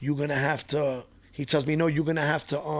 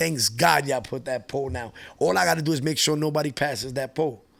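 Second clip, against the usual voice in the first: ordinary delivery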